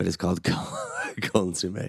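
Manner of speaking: laughing while talking. Telling another speaker the name of the dipping sauce, laughing while talking. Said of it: "Why are you laughing?".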